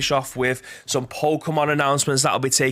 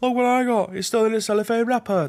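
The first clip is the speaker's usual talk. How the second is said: gleeful, showy put-on London accent; 8 semitones higher than usual. Imitating a colleague showing off a wrapped game: Graham impression. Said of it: "That's my impression of Graham".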